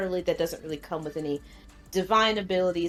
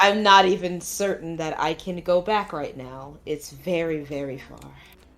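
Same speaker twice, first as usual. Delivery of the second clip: voice pulled down low, lowered; 4 dB louder than usual. A character in the scene replies to the others in a lowered voice. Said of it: "audibly lower his voice".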